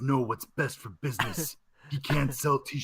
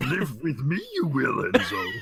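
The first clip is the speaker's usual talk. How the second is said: swooping, pitch-swinging, sage-like little alien voice; 3 semitones higher, 4 dB louder than usual. Imagining a friend going to live with Yoda, the speaker voices him: Yoda impression. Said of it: "really good Yoda impression".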